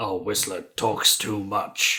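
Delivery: unhurried, measured character voice. Quoting a film character's complaint: Blade impression. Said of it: "how good my Blade impression was".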